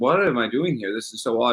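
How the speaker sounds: ordinary talk, nothing marked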